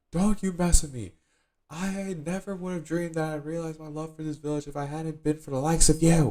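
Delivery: play-acted sharp, very high, loud snapped retort. Retelling a story, voicing a character who snaps back at another. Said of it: "snaps back".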